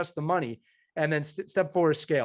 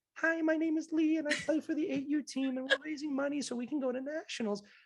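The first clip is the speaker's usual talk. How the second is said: put-on very high, soft eight-year-old kid voice; 10 semitones higher, 6 dB quieter than usual. Showing how a youth team could pitch a fundraiser on video: 8-year-old child voice. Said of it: "channeling my inner 8-year-old".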